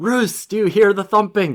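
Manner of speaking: put-on, high, hollered shout. Retelling shouting through a door to the plumber: imitating own past shout. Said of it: "So I shout in to the plumber".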